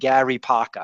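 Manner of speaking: put-on Rhode Island accent with the R's dropped.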